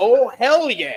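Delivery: icy, cold exclamation in a put-on character voice. Reading out a viewer's super chat donation message, Stone Cold voice. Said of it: "in his stone cold voice".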